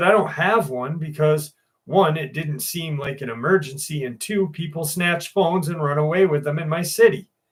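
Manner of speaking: plain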